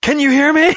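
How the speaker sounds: very high, loud shout. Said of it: "puts it to his mouth and shouts".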